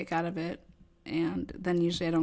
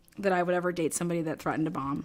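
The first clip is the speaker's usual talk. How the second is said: ordinary delivery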